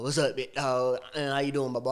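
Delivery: heavy Texan southern drawl. Retelling a phone call with a man from texas, imitating a big southern drawl. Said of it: "He got that big southern drawl".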